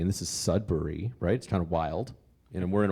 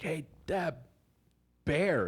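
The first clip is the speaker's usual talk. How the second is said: loud, carrying stage whisper, pitched up; 9 semitones higher, 3 dB quieter than usual. Retelling a story, the speaker reenacts calling to someone 50 feet away, loud whisper. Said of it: "you're doing the loud whisper".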